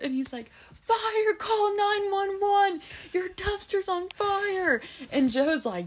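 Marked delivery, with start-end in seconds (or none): 0.9-4.8 mock screaming, much higher and slower. Retelling what a man said over the headset, imitating someone screaming. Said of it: "He's just screaming".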